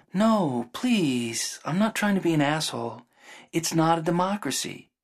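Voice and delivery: gentle placating tone. Retelling what a woman replied in a conversation: imitating her gentle tone. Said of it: "Then she was like, really gently".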